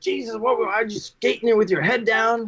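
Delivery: put-on, high-pitched, scolding father yelling. Retelling the father in the dressing room after the game: imitating dad yelling. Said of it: "yelling at me".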